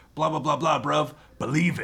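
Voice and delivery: put-on high, loud London street slang accent.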